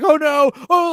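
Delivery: shrill, very high, loud wailing sobs. Acting out an imagined stand-up set gone wrong: mock crying.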